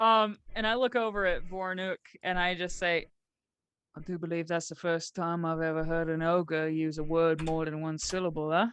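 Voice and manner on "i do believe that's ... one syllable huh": quiet, low, hushed aside. Speaking in character to a companion about an ogre: said quietly. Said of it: "I say that quietly".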